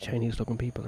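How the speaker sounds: hushed whisper. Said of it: "Why are you whispering?".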